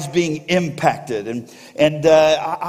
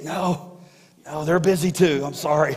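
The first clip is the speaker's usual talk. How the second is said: put-on little boy whisper, quieter; 4 dB quieter than usual. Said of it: "the little boy was kinda whispering".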